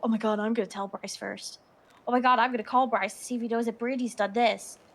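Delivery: mock-excited, eager gossiping voice. Complaining about their friend group, mimicking friends' excited gossip. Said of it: "They hear one thing and they go".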